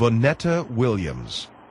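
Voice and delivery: very slow, each syllable set apart, deliberate. Showing how the name must be said so people get it, very slow, deliberate. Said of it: "Very slowly and very deliberately".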